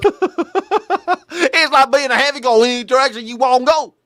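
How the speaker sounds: mock elderly man's speech. Reacting to a clip, repeating an old man's words: imitating an old man's accent. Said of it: "don't you love guys that talk like this?".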